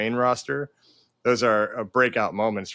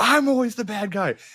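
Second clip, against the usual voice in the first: put-on angry screaming, pitched higher; 11 semitones higher than usual. Retelling a promo where Paul Heyman screamed at Jey Uso: imitating Paul Heyman screaming. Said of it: "when he was screaming at him".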